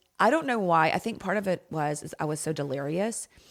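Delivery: normal talking voice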